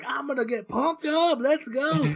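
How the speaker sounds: mock very high, stretched-out, drawn-out scream. Retelling an anime scene where a pilot screams at the crowd: imitating someone screaming. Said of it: "he's screaming at the crowd".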